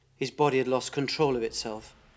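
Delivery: ordinary delivery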